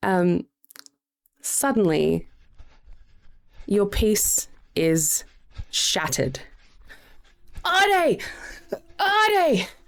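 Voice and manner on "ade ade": breathless carnival barker shout, much higher pitch. Narrating a scene, the carny Cedric calls out: breathless Cedric shout. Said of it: "A breathless voice shouts".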